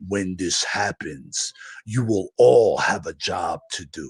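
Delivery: very deep, mechanical robot voice. Recounting a vision, voicing what the voice in the mind said: very deep robotic voice. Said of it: "I hear like this very deep robotic voice that goes".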